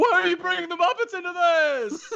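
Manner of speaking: put-on comedian yelling. Answering a request to do Jerry Seinfeld yelling about Kermit: Jerry Seinfeld yelling. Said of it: "Jerry Seinfeld yelling about Kermit".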